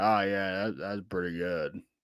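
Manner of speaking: low, deliberately bad put-on voice. Retelling what a player said about German food: terrible Xavier Legette impression. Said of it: "That was a terrible Xavier Legette impression".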